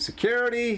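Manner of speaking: shrill, very high-pitched shrieking yell. Voicing a character who finds someone dead: yelling for security. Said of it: "She starts yelling".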